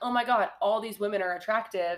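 ordinary talk, nothing marked

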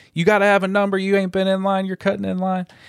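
shrill, high-pitched yelling. Retelling how a woman far back in line yelled: imitating someone yelling. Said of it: "is yelling".

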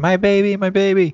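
loud, very high, frantic panicked shriek. Telling a story, the speaker voices a panicking roach with its babies: retelling a panicked scream. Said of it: "and scream".

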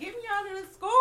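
high, loud, desperate, pleading.

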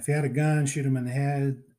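put-on Pittsburgh accent. Retelling a police chief's lines from a movie: imitating a Pittsburgh accent. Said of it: "he's got the great, great Pittsburgh accent".

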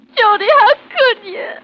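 very high, loud, tearful sobbing. Confronting a man who spent the night in town, crying. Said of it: "Don't cry".

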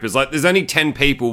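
ordinary talk, nothing marked

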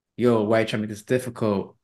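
whispering. Retelling what someone said to cashiers at a store: imitating a whisper. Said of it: "he had whispered to them".

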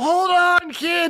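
very high-pitched, loud put-on yell. Calling out to a kid in the game scene: yelling in character. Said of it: "I just yell".

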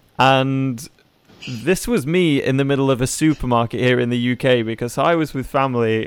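ordinary delivery

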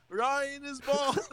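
put-on high scream. Retelling how a friend screamed insults through the TV: imitating John screaming. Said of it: "screaming through the T V".

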